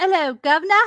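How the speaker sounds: earnest put-on English accent. Taking your turn after being asked for your best english accent. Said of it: "your best accent or your English accent".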